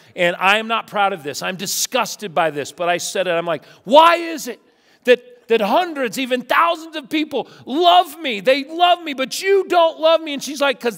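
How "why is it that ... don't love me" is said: shrill, high, loud, raised screaming rant. Retelling yelling at her through the bedroom door, reenacting own screaming. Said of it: "and I'm screaming".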